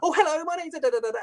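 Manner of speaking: over-bright, very high, chirpy, bubbly voice. Showing how call centre staff sound: too chirpy and bubbly. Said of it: "too chirpy and bubbly".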